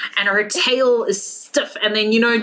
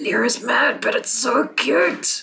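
muttering quietly under the breath. Voicing two guards talking about a cat: under their breath. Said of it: "under their breath".

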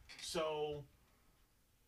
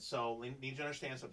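normal talking voice

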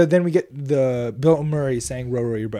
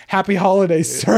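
mock, sudden, high, mild screamy yell; 6 semitones higher than usual. Retelling a movie scene where a guard at a desk stands up: imitating a screaming guard. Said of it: "He just screams".

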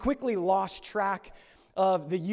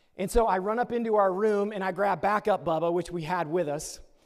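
ordinary talk, nothing marked

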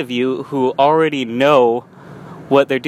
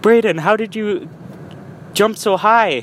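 put-on Korean accent, pitched high; 7 semitones higher than usual. Retelling what an instructor asked him, in a korean accent. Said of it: "that was my best Korean accent I could do".

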